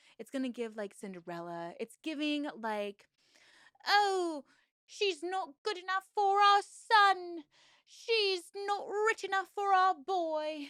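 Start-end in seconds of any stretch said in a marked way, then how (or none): 3.9-10.7 awful put-on British accent, high and loud. Imitating disapproving parents of a son: awful British accent. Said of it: "Is my British accent awful?".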